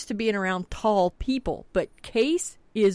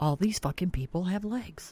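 mock-deadpan delivery, quieter; 3 semitones lower, 5 dB quieter than usual. Retelling how one man answered another, retelling a deadpan line. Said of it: "just as deadpan can be".

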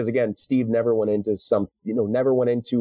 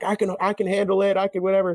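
very high screaming, as if in agony; 10 semitones higher than usual. Retelling a movie scene of a man screaming in a tube: imitating Steve Rogers screaming. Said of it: "when he's in that tube and he's screaming, he's like".

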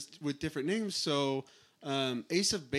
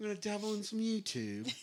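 put-on British accent, pitched slightly higher; 6 semitones higher, 4 dB quieter than usual. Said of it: "That was my [name] impression".

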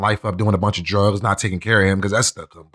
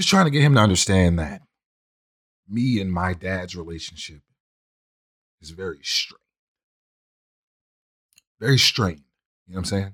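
holding back tears, lower pitch; 2 semitones lower than usual. Speaking while others say they will wait, holding back tears. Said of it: "Like I am now".

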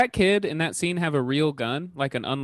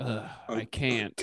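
put-on sad mutter, lower and much quieter; 4 semitones lower, 8 dB quieter than usual. Discussing a movie with friends and quoting Victor's reply, imitating Victor's sad mutter. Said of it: "under his breath he's all sad and he goes".

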